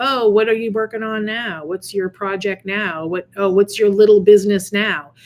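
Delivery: mock-condescending, put-on condescending tone. Retelling how people question their latest project; mock-condescending tone. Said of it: "outright condescendingly".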